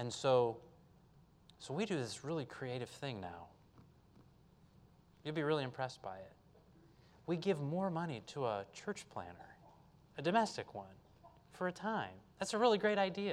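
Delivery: tongue-in-cheek dry sarcasm, soft and swooping. Addressing the audience, sarcastic. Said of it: "I'm being sarcastic".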